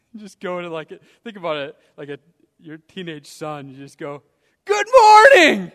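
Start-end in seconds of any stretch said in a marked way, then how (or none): 4.7-5.6 loud shouting, much higher. Speaker illustrating an early greeting to a teenage son trying to sleep, a loud morning greeting. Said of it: "with a loud voice rising early".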